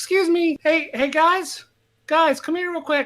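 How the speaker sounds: tiny, very high, little elf voice. Telling the story to the group, the speaker voices an elf in a little elf voice. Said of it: "you just hear this little voice go".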